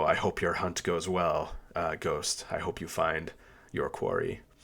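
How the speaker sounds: whispering under breath. A character sends off someone fleeing toward the wasteland, whispering under his breath. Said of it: "kind of whispers under his breath".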